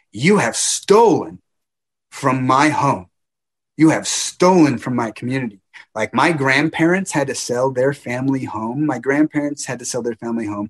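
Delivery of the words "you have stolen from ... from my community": mock direct shout, loud and raised. Retelling confronting the rich man on his phone: retelling a yell. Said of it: "And I yelled at him".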